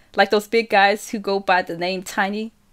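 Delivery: plain reading voice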